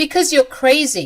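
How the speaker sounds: furious shouting. Acting out a fight with the mother-in-law: yelling angrily. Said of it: "Why are you yelling at me?".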